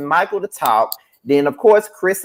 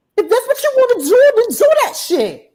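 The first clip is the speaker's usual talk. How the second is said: very high-pitched voice; 3 dB louder than usual. Imitating a reality show cast member's confrontation: Jennifer impression. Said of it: "you do a good Jennifer impression".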